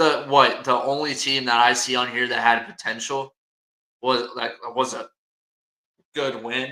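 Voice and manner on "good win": dry, ironic, sarcastic tone, as in air quotes. Calling a team's win good, in quotation marks: sarcastic. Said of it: "I'm being sarcastic here".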